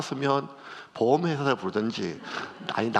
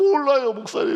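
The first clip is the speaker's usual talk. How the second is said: put-on tearful crying voice, higher and louder; 13 semitones higher, 7 dB louder than usual. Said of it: "막 울면서".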